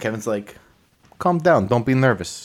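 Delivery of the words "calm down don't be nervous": put-on New York accent. Retelling a scene as Cameron and Kevin enter the house, voicing Kevin in a New York accent. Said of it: "I'm doing a New York accent for Kevin".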